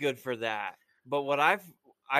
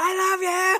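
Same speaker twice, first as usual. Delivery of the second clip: very high, elevated, loud and raised voice; 7 dB louder than usual. Speaker retells her answering back the same way, retelling a raised-voice reply. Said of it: "but it's in the same".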